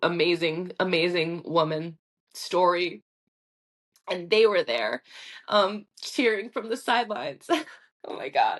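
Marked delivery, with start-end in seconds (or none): 4.1-8.6 tearful, weeping while still talking. Recalling friends cheering from the sidelines at a race, crying while talking. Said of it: "Why can't I stop crying?".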